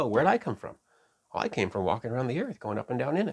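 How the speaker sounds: cocky, arrogant, prideful swagger. Showing how Satan answers God in the text: put-on arrogant Satan voice. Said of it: "an air of arrogance and pride about him".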